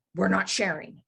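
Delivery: snarling, growled wolf voice. Voicing a wolf warning a player while eating: snarling wolf voice. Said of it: "you hear a snarl".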